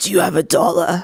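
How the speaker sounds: menacing, looming, scary, imposing voice. Retelling a lady coming up to them at 3 a.m.: imitating a scary imposing voice. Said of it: "in the like this scary imposing voice".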